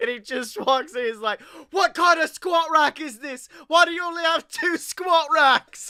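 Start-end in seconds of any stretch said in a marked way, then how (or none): 1.7-5.9 put-on angry chef voice, higher and louder. Joking about a gym makeover show, doing a Gordon Ramsay impression. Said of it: "Ramsay's Hell's Gym".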